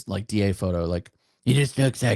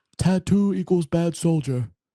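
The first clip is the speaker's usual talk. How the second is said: simple-minded, pitched-up voice; 8 semitones higher than usual. Retelling what a sergeant major of the Army says: Raymond Chandler impression. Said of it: "his voice is like".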